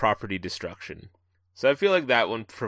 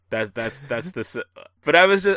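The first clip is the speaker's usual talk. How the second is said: usual speaking voice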